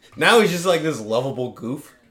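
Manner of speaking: ordinary delivery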